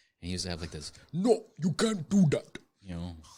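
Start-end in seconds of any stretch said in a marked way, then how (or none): 1.1-2.6 put-on high, slow Djibouti accent. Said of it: "like, Djibouti".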